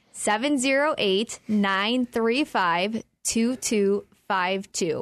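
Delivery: slow, deliberate, spaced-out digits. Repeating a phone number after being asked: slower. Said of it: "Slower, one more time".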